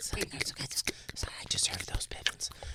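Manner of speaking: soft, slow whisper. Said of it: "hanging that on it and whispering into it".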